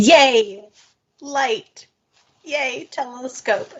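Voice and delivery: thrilled cheering, very slow, high and drawn out. Reacting to news about the telescope's alignment: excited cheering. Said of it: "I am so excited about this".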